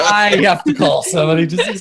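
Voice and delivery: high, laughing, fake-sounding put-on voice.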